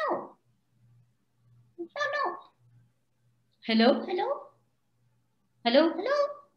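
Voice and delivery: high, swooping, put-on ventriloquist puppet voice. A ventriloquist shows how he makes a water bottle talk, in a talking water bottle voice. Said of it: "I throw voice, I make random things talk... I will make this water bottle talk".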